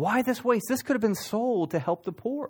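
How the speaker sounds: high, drawn-out indignant outcry.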